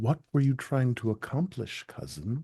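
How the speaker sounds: softly spoken, quiet and low-key. Player voicing his character tending a cousin's wound, asking quietly. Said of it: "he's gonna quietly ask".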